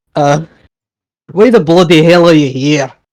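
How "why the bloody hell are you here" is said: put-on raised voice, threatening tone, Scottish accent. A character with a blade at someone's throat asks a question, threatening Scottish accent. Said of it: "ask in a very threatening manner".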